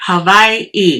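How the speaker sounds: Hawaii with w as v, pause before end. Showing how he pronounced the word: Hawaii with w as v, break. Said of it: "the W is pronounced like a V... You take a pause and then enunciate the last syllable".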